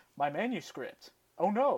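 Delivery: swooping, slow English dub delivery. Retelling a movie character losing his manuscript: imitating the English dub. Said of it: "so that's why I'm talking like that".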